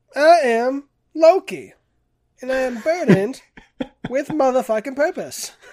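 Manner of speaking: very loud, high-pitched belted shout. Retelling a comedian's impression of Samuel L. Jackson playing Loki: Samuel L. Jackson doing Loki. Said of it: "impersonation of Samuel Jackson, doing an impersonation of Loki".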